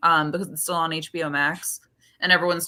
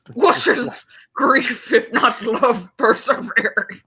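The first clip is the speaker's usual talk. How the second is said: mock elderly man voice; 6 semitones higher, 5 dB louder than usual. Closing a video review, show off your old man accent. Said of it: "do my old man accent".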